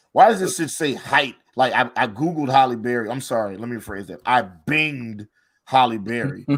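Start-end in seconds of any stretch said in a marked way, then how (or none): 4.3-6.5 put-on contempt laid on heavy, slow disdainful drawl. Correcting a word choice, saying the search engine's name: mock disdain. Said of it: "I have to say it with as much disdain as possible".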